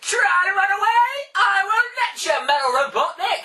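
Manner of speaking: very high, loud, slow cartoon voice. Imitating the favourite dub voice of a character: Sonic voice. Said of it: "it's the only one I can imitate properly".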